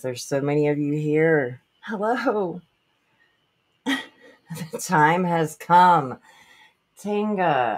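breathless, excited, out-of-breath, bursting voice. Starting a livestream and greeting the many viewers who joined: out of breath. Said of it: "I'm out of breath".

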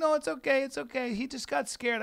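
high, a little teary, half crying. Retelling a bitten woman's reply: imitating someone crying a little. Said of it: "she's kinda crying a little bit".

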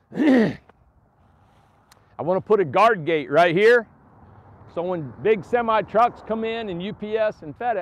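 full-out, drawn-out scream, very loud and high. Showing everybody the prairie where a guard gate will go, screaming. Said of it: "I don't know why I'm screaming".

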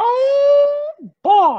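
very high squeaky cartoon voice, stretched "oh". In a video, a speaker tries out a Mickey Mouse voice. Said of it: "my Mickey Mouse is getting decent".

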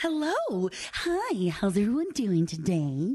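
on-air radio announcer-style voice. Opening the show, a host greets everyone in her radio voice. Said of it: "That's her radio voice".

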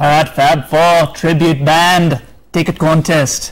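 slow, put-on Liverpool accent. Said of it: "It's my [name] impression for ya".

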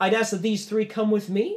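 soothing, reassuring host voice, high and loud. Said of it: "Lalos goes".

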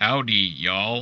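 put-on American accent. Asked to show the practiced american accent: american accent. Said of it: "worked on American accent ... it go like this".

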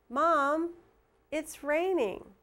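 brief break right after Mom. Showing a written pause mark aloud, with a short pause after mom. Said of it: "Hear the little pause there, how I stopped just a little bit?".

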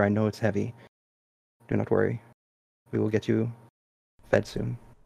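close, soft, hushed half-whisper. Voicing a character leaning forward to comfort her horse: half-whispering. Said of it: "she will lean forward and whisper".

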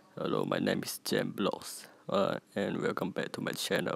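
put-on deep, breathy, whispered disguised voice. Copying a creator who hides his real voice, in a put-on very deep voice. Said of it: "So I can also do that voice like this".

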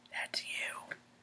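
breathy, very quiet, barely-there whisper. Retelling a girlfriend leaning over to poke and tell: imitating a whisper. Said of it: "leans over and whispers".

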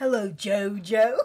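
put-on British English accent. Quoting a line from a funny dub, in a British accent from the dub. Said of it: "Especially with the British accents".

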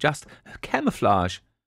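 speaking through a self-conscious laugh. A woman answers Miss Marple, laughing self-consciously. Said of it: "she laughed self-consciously".

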